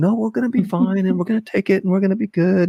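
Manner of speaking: soothing, calm, very high-pitched voice. Retelling how Veronica reacts to stressful parking: imitating Veronica being calm. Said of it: "she's just the calmest".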